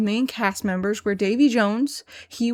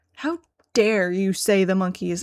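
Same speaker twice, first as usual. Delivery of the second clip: put-on shocked, disgusted reaction; 2 semitones lower than usual. Retelling a substitute teacher's reaction to a music request: imitating disgusted shock. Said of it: "with such utter despair and shock and disgust".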